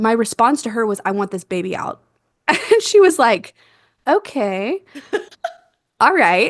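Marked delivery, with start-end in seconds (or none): none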